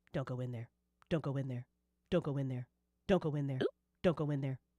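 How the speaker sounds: very low, glitching, broken, creepy robotic drone. Speaker retells a thing holding Beth, staring and blinking at the listener: creepy broken robotic voice. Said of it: "in like this broken robotic voice".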